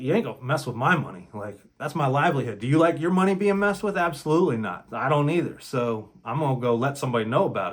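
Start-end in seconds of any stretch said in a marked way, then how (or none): none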